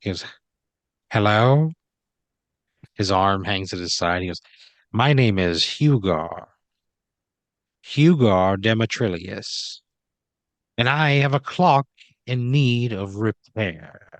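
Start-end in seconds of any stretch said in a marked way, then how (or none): 1.1-14.2 affected, highbrow, upper-class way of talking. Voicing a visitor at a repair counter: highbrow way of talking. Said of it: "highbrow way of talking".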